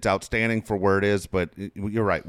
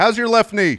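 all-loud delivery, very high-pitched; 13 semitones higher, 7 dB louder than usual. Imitating a coach as a dad at home: loud Brian Dutcher impression. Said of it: "Just all loud".

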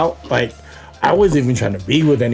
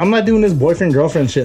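ordinary talk

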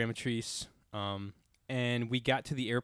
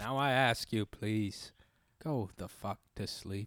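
put-on narrator voice, like a famous narrator; 2 semitones lower than usual. A speaker's best MF podcast bit, in a Morgan Freeman voice. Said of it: "In a Morgan Freeman voice".

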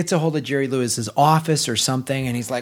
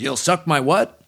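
put-on voiceover actor voice. Retelling the actor's reply to the booth: Robert Mitchum voice. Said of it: "And he just goes".

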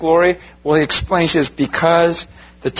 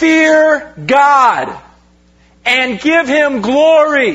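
mock heavenly, angelic scream, pitched way up; 9 semitones higher, 4 dB louder than usual. Speaker asking listeners to picture an angel flying by: imitating an angel screaming. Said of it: "And this angel screams out".

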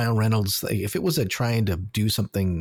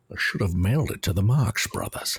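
bad put-on Scottish accent. Joking about film quotes: terrible Sean Connery impression. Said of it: "terrible Sean".

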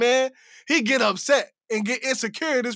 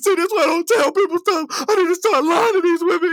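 play-acted high, loud sobbing through the words; 7 semitones higher, 5 dB louder than usual. Retelling a reality show scene where a man starts crying: imitating a man crying. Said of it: "He start crying".

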